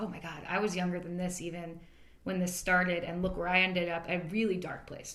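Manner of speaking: ordinary talk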